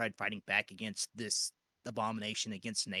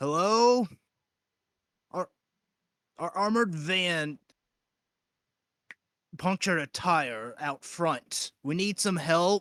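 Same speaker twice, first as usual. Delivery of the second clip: booming, loud, high shout in a put-on voice; 8 semitones higher, 10 dB louder than usual. Playing out a scene, a speaker yells at the front of a building, yelling in a fake voice. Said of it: "yell out in a fake voice".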